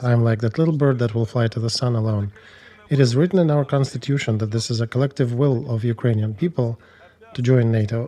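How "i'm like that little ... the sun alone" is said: plain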